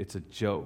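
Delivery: soft, low mutter under the breath.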